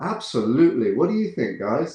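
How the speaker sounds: put-on smiling, cheerful-sounding voice. Retelling a reply to bad notes in studio meetings: imitating own smiling reply. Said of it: "I would just smile when they gave these notes and go".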